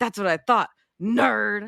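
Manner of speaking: mocking, taunting tone. Quoting a movie line shared with a friend, imitating Danny McBride. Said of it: "the way that Danny McBride says to him".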